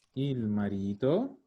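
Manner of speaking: il marito said slowly.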